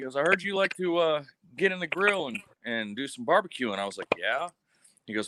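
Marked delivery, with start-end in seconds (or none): 0.2-3.7 put-on very thick Cajun accent, higher pitch. Retelling what the First Sergeant said to him, in a thick Cajun accent. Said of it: "in his insanely thick coon ass accent".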